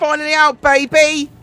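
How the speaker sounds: weird, high, loud, shrill southern British accent. Speaker repeating an announcement to listeners in a put-on southern British accent. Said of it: "I said it in a weird accent".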